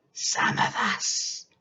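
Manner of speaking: put-on throaty, sinister old witch whisper. Reading the old woman's words to frightened George, throaty witch whisper. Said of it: "The old hag grinned, / that she was a witch? / The old hag grinned, / You mustn't be frightened of your old [name], / and all at once she was leaning forward in her chair and whispering in a throaty s".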